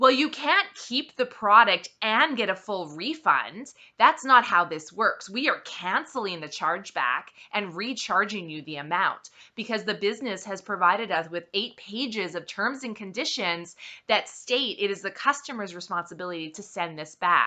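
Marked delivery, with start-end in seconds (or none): none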